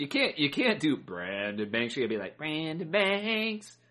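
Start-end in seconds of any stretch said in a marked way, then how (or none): 2.4-3.7 squeaky put-on little-person voice, higher pitch. Joking about a small football player, calling his name: Munchkin voice. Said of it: "all Munchkin voice".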